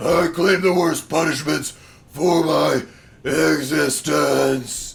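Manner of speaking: serious metal vocal, very loud, slow, booming, drawn-out. Reading out a title in a serious metal voice. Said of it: "you gotta say this like in a serious metal voice".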